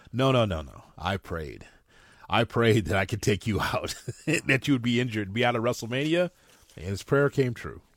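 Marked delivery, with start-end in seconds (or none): 0.9-6.3 evil, gloating delivery. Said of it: "a little bit more evil when he says that he prayed for it".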